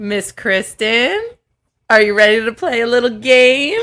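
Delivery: sinister, slow, creepy coaxing tone. Inviting another speaker to play a game: creepy luring tone.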